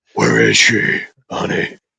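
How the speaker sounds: rough, creaky, raspy aging drag queen voice. Mocking the Batman growl as an aging drag queen who smoked too many cigarettes. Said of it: "an aging drag queen who smoked too many cigarettes".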